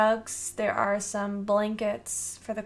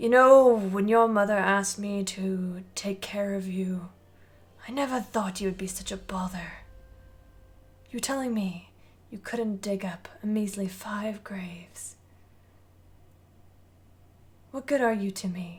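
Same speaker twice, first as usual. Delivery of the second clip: put-on aged, older-sounding voice, raspy and rasping. In a tabletop scene, the necromancer's master scolds him, older, raspier voice. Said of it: "an older, um, raspier voice comes in".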